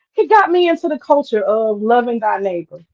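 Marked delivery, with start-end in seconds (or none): none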